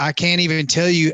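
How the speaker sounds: ordinary talk, nothing marked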